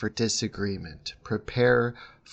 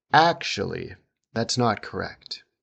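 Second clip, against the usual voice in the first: actually hit hard and emphatic, strongly stressed. Intonation lesson on signalling disagreement: strong stress on actually. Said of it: "That strong stress signals disagreement first".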